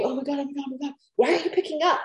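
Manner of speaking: frantic panic, high-pitched and rushed. Acting out the partner's imagined frantic phone call: imitating husband calling in a panic. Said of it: "He'd probably have to call me".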